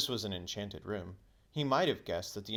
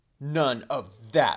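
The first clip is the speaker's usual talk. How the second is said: very loud, harsh, nasty tone; 4 semitones higher, 12 dB louder than usual. A narrator reads a character's retort during a quarrel: nastier than intended. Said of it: "in a voice even nastier than he meant it to be".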